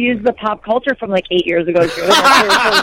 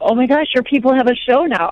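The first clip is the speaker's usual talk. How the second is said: ordinary talk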